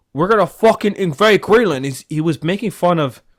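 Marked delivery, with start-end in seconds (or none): 0.2-1.9 crude, put-on British accent, loud, high and barked. Mocking a public figure's talk of invading Greenland: Andrew Tate impression with British accent. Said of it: "this bastard British accent".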